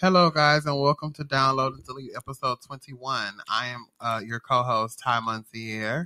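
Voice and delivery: very serious, soft, measured delivery. Co-host opens the podcast episode with a welcome and introduction, in a serious tone. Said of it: "you sound so serious".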